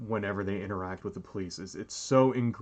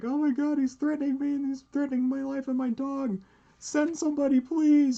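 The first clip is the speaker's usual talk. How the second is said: very high, loud, fake hysterical sobbing wail; 5 dB louder than usual. Acting out a woman with a dog putting on an act, imitating a woman's hysterical crying. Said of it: "she's like hysterically crying".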